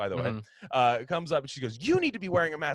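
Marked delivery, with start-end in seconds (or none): 1.8-2.7 high, frantic, unhinged, crazed tone. Retelling how a woman with no mask confronted a worker: imitating a crazed scolding. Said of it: "Like that, going crazy".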